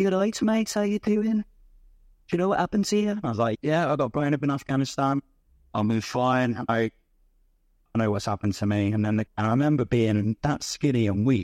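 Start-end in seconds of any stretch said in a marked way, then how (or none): 0.0-3.2 put-on very high-pitched Birmingham Brummie accent. Retelling what a girl sitting at the end of his bed said, in a Birmingham accent. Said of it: "she had a Birmingham accent".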